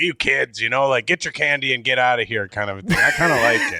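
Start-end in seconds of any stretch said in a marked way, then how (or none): 0.0-2.5 put-on cranky, mean old shopkeeper voice. Picturing an old person running a small-town candy store, imitating a mean old shopkeeper. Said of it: "an old lady or an old man working there and being like".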